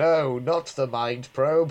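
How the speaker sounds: mock deadpan, flat line delivery. Repeating a line from the episode: imitating a flat line reading. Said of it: "because it's just so flat".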